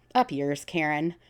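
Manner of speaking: normal talking voice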